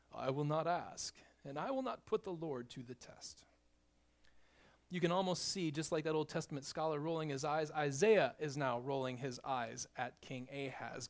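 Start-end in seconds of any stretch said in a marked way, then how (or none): 0.2-3.4 heavily laid-on, pious, put-on English accent. Speaker retelling a Bible verse, voicing King Ahaz answering: Ahaz in a pious English voice. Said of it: "the most pious English voice he could come up with".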